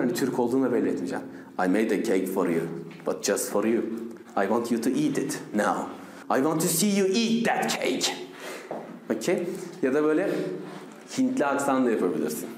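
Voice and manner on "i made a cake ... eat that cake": low-pitched Russian accent. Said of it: "böyle Rus aksanı yapacaksın".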